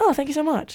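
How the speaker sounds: dainty, soft, light put-on British accent. Retelling a woman's reply to the speaker's compliment, in her little british accent. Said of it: "in her little British accent".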